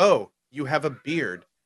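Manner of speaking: slow, acted passive-aggressive tone. Retelling how a game character berated another, mock passive-aggressive. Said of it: "she like passive aggressively berates him".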